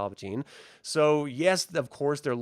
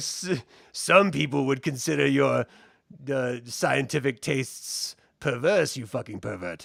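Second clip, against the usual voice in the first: put-on sinister villain voice. Retelling a cartoon scene, imitating the Emperor. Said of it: "He's like".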